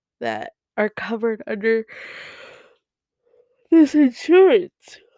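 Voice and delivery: speaking through a yawn. Recounting asking your insurance for a list of therapists, yawning while talking. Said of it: "I'm sorry, I was yawning".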